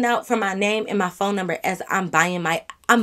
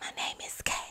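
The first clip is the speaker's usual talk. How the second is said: very quiet, hushed whisper. Up at the register, telling them her name: whispered. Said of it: "I be up at the register whispering for real, like".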